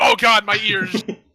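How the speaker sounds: acted pained cry, mock pain. Narrating armored men whose yell echoes in their helmets, acting out a pained cry. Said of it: "they immediately grab their heads like".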